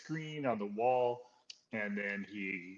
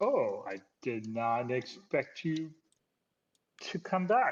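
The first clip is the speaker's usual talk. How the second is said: surprised, taken aback; 3 semitones higher than usual. Voicing a character who sees the returning crew: surprised. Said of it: "looks really surprised to see you and says".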